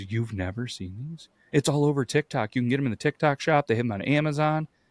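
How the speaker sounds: excited speech. Retelling her answer about the wrapped books: imitating her excited voice. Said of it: "she's so excited".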